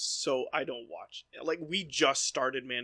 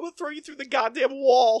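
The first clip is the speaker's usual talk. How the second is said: yelled bad Eastern accent, loud and high; 11 semitones higher, 11 dB louder than usual. Joining a joking bit with another speaker: bad Eastern accent. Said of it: "My Eastern accent sucks".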